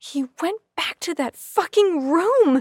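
very loud, shrill, furious scream. Finding Nigel gone after the tunnel, the narrator screams angrily. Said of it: "I screamed angrily".

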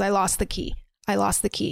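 normal talking voice

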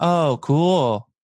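dripping with heavy sarcasm. Retelling own past reply to a girl at the pool: imitating own sarcastic reply. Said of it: "I said it really sarcastically".

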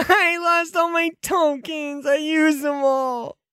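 very high, slow, drawn-out tearful weeping. Playing a kid at a birthday party, answering why they cry: crying. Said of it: "Why are you crying?".

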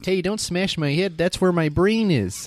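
loud, high, put-on Upper Midwest Wisconsin accent. Joking after talk of smashing heads together, in a mock Wisconsin accent. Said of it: "That's like a Wisconsin accent".

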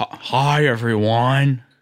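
stunted, halting, chopped-up delivery. Showing how Kevin on The Office talks, greet everyone in a stunted Kevin from The Office voice. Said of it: "talking in a stunted way".

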